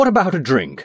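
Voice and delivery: high, falsely hearty, cried out. Narrator reads Cobthorn after he catches sight of a bell, with false heartiness. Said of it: "he cried with false heartiness".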